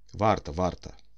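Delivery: plain reading voice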